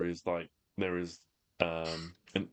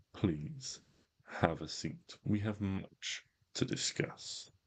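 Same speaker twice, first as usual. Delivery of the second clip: smooth, full-bodied, cool, rich voice. A figure appearing before a throne of spikes addresses the party, cool, rich voice. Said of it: "he speaks in a cool, rich voice".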